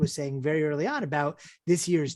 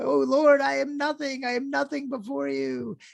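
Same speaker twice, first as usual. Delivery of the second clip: mock very high, slow, drawn-out plea, sounding overwhelmed; 10 semitones higher than usual. Telling a joke, voicing a rabbi bowing before the ark: acting overwhelmed with emotion. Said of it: "the rabbi gets overwhelmed, you know, with, like, emotion".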